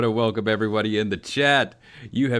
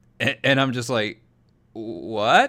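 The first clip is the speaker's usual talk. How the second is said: ordinary talk, nothing marked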